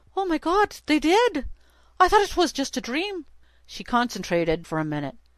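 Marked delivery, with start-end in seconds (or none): 0.1-3.2 trembling Irish voice, pitched very high. Reading a man's answer to her question, in a shaky irish accent. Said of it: "In his shaky voice, full of Irish twirl".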